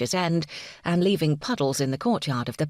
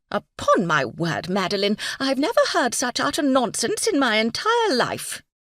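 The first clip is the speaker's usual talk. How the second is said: shrill voice, pitch swooping and climbing up; 8 semitones higher, 4 dB louder than usual. A narrator reads Phoebe's declaration to Madeline: Phoebe's shrill voice. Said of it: "she heard Phoebe's shrill voice declare".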